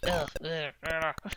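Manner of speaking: mock low, mumbly, groaning mummy voice.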